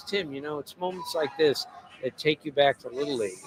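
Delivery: very soft, hushed, close confiding voice. Writer retelling what a player said to him, in a very soft voice. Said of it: "he says to me in a very soft voice".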